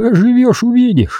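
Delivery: very high-pitched, evasive, dodging grumble. A man answers a newcomer's remarks about how long they've been here: evasive grumble. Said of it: "уклончиво буркнул Мельников".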